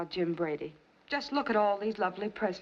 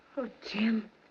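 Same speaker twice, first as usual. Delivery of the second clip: crying tearful voice, higher; 3 semitones higher than usual. Answering a declaration of love, crying while speaking. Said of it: "why are you crying?".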